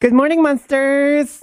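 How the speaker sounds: high, put-on lady's voice. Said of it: "Now talk like a lady".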